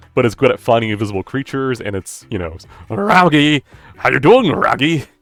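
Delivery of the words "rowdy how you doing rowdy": loud, high, swooping, drawn-out, goofy cartoon dog voice. Describing a summoned creature to the players: Scooby-Doo voice. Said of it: "we get to make you do the voice".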